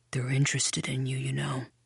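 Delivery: low, hushed voice, close and quiet. Narrator voicing a man speaking to the narrator, in a low voice. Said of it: "he says in a low voice".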